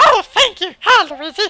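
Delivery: shrill, loud, terrible character voice, done badly. Playing a game and reading a character's dialogue aloud in a terrible Toad voice. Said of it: "that was a terrible, terrible voice".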